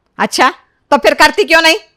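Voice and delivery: loud, high, exasperated scolding shout. A mother scolds her daughter Sunita for not doing as told, yelling. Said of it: "क्यों सुनीता पर चिल्ला रही हो?".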